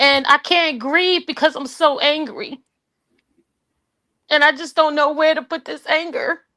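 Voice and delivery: fighting back tears. Speaker apologizing for getting emotional, holding back tears. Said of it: "I try not to cry".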